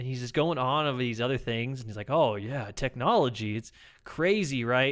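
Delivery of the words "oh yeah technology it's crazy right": odd, weird, slow, drawn-out way of talking. Retelling what a new coworker kept saying: imitating his weird delivery. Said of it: "saying it in this really weird way".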